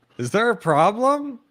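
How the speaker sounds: loud, very high-pitched yell. A player's character reaches the docking bay door and is yelling out. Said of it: "I just yell out".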